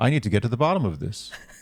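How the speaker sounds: put-on subtle Canadian accent. Imitating Brendan, a show contestant, in a subtle Canadian accent. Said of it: "This is a more subtle Canadian accent".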